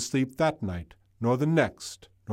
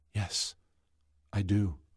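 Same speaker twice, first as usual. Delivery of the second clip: almost whispering, near-whisper; 4 semitones lower, 6 dB quieter than usual. The wizard answers Elsa, almost whispering. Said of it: "The wizard almost whispered".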